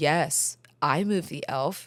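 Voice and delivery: put-on deadpan tone. Retelling his answer about moving the elf: imitating a deadpan reply. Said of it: "he looked at me dead".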